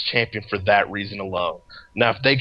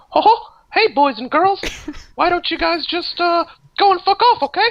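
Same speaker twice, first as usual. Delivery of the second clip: very high-pitched cartoon voice; 3 dB louder than usual. Signing off at the end of the hour, Mickey Mouse voice. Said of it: "gonna start doing like a Mickey Mouse sign off".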